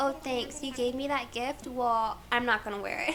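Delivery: normal talking voice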